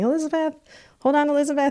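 put-on high yell. Retelling a dad yelling from the metro after a push off: imitating dad yelling. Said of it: "he's yelling".

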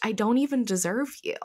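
normal talking voice

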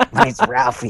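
very high, squeaky cartoon-style voice. Showing another player what the Beavis and Butthead voices sound like. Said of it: "I'm just gonna go ahead and do it".

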